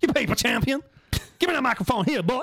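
high, sermon-style church-preacher voice. Acting out someone's words while chatting with a friend, like a church preacher. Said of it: "You sound like a preacher from church".

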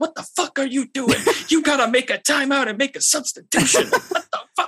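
very high, angry, fired-up hollering. Speaker retells their dad getting fired up at a game, yelling at the coach. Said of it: "he'd be like yelling at the coach".

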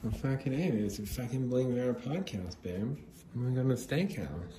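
high junkie woman character voice. Doing a bit on the podcast in the junkie girlfriend voice. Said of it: "That's the Junkie Girlfriend voice".

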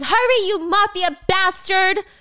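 high, drawn-out scream, stretched long. Retelling a scene where one player screams at another: imitating someone screaming. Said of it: "Mina screaming".

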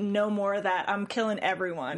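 ordinary delivery

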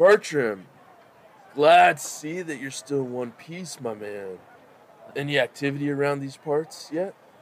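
smug, swaggering, easy, cocky tone. Voicing a contact who sits down across from Bertram: cocky. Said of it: "He cracks a cocky smile".

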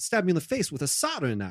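animated celebrity actor voice with wide swooping pitch. Trying the impression again after being told the tone is wrong: Christopher Walken impression. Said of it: "it's wrong tone".

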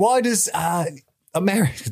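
terrible fake British accent. Describing a British guy's TikTok to another speaker, bad British accent. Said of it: "This is a terrible accent".

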